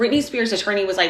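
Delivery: ordinary delivery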